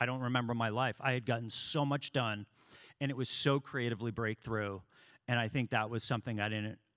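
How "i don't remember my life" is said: ordinary talk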